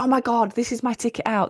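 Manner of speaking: mock bursting with excitement and hope. Recalling first hearing about network marketing, speaker reenacting past excitement. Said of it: "I was so fucking excited".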